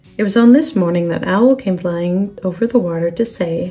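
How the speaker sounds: ordinary delivery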